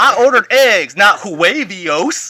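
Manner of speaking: loud, put-on yell. Riffing with others on how someone would complain, mock yelling in a put-on voice. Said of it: "if they're yelling about ordering eggs in that voice".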